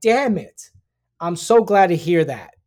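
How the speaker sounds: play-acted, loud, swooping, heavy sarcastic tone. Retelling how a man reacted to hearing she was safe: retelling a sarcastic remark. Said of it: "right in a sarcastic way".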